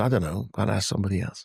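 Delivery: plain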